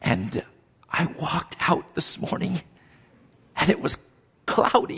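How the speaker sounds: hushed, intense, emotional, breathy preacher near-whisper. Speaker demonstrating styles of preachers, doing the soft-spoken emotional one. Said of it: "a soft-spoken emotional".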